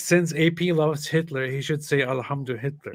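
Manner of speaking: plain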